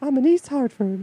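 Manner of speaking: high, loud squeaked-out voice. Making up a skit, the speaker answers in a Mickey Mouse impression. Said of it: "I can only do a Mickey Mouse impression".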